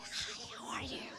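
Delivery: put-on husky movie-star voice. Retelling a hoarse voice after surgery: Demi Moore husky voice. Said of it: "Demi Moore".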